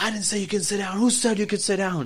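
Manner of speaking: high-pitched, loud screaming. Retelling how a customer screamed at a server: imitating a screaming customer.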